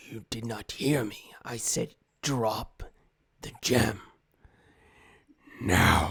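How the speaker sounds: huge, throaty, guttural creature growl. Narrating a game scene, voicing a character speaking to the players, big guttural voice. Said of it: "it's just this big guttural voice".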